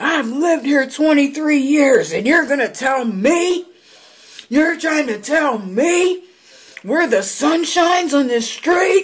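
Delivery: very high, acted, outraged shrieking rant. Telling a story, the speaker acts out a man who screamed at them, acting out a man screaming. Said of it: "He's screaming".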